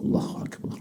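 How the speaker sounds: whispered, barely audible. Explaining the silent takbir of a follower in prayer, quiet, audible only to oneself. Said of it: "cukup sir, terdengar oleh diri kita sendiri".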